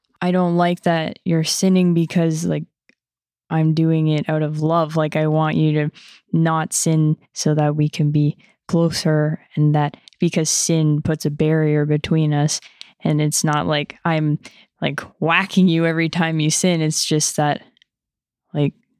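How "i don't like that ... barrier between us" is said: ordinary talk, nothing marked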